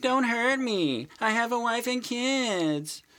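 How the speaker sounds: acted frightened screaming. Describing how an average person reacts to a bank robbery: imitating a cowardly scream. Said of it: "while screaming".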